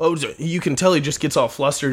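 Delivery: ordinary talk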